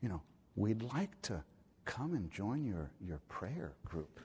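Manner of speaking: soft, slow, timid voice.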